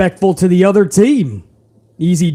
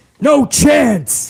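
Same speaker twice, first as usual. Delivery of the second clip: put-on rough, raspy voice, pitched higher; 7 semitones higher than usual. Reading a viewer's comment aloud: Vince McMahon voice. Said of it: "Had to do that in Vince McMahon's voice".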